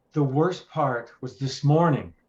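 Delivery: ordinary talk, nothing marked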